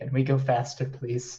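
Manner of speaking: whispering in character. Speaking in character to a small monkey in a crowded elevator: whispering in character. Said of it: "And I whisper to the m-".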